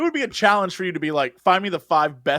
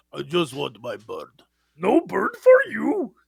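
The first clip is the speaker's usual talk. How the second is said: slow, drawn-out creature voice swooping up and down. Trying for Cookie Monster, the speaker slips into a Yoda voice. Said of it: "also that was also Yoda".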